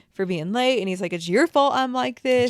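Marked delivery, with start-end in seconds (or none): 1.1-2.5 acted out, raised, unhinged, crazed yelling. Retelling a recording of a father scolding someone for being late: imitating someone yelling. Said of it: "he's yelling at her".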